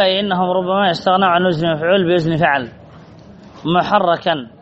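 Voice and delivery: ordinary delivery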